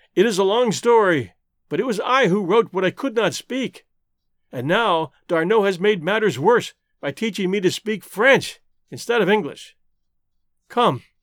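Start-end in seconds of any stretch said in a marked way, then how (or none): none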